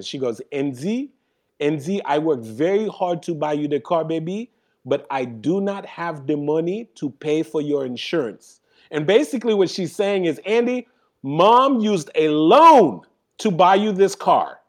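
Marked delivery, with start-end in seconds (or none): 0.5-8.6 put-on voice with a Haitian accent. Retelling what mom said at her bedroom door, strong Haitian accent. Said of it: "with her strong Haitian accent".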